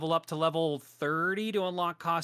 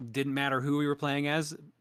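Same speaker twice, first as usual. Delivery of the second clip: normal talking voice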